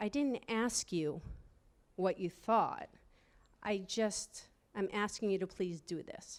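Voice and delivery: acted trembling voice. Speaker repeats what she said to someone in class, retelling own shaking voice. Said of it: "my voice was shaking".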